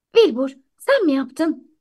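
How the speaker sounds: plain reading voice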